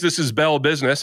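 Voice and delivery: ordinary talk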